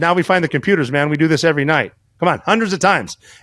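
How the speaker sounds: usual speaking voice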